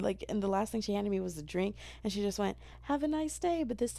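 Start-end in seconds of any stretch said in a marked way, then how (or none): 2.8-3.6 friendlier, nicer tone, very high-pitched. Retelling a worker handing over the last drink, imitating her nicer tone. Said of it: "in a nicer tone".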